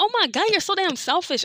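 very high, sharp, irritated snap. Quoting your past self in an argument in a car, retelling snapping at her. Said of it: "I snapped at her".

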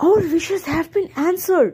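with a gasp. An old woman in a narrated tale sees the gingerbread man move, gasping. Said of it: "she gasped".

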